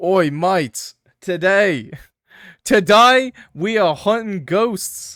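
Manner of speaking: booming, loud, clumsy put-on Australian accent. Imagining an australian ghost hunter on a ghost show, in a bad australian accent. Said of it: "I can't do an Australian accent".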